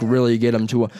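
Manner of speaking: ordinary talk, nothing marked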